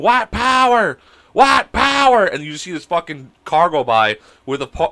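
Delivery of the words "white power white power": very high, stretched-out, drawn-out hollering. Retelling a friend yelling from a car window: imitating a friend yelling. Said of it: "starts banging on the horn and just yelling".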